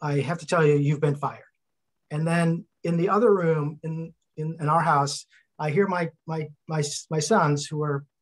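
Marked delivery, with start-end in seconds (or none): none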